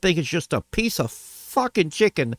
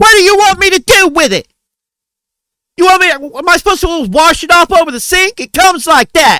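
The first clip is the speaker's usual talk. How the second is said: very loud, shrill, full-volume yelling rant; 12 semitones higher, 10 dB louder than usual. Retelling how the cook reacted to the returned food: imitating the cook yelling loudly. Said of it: "Real fucking loud at her".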